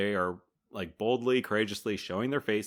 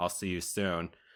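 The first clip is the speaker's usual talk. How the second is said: chilling, menacing put-on voice, lower and quieter; 4 semitones lower, 5 dB quieter than usual. Retelling a movie farewell at a metal gate: chilling Lockjaw imitation. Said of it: "He just very chillingly is like".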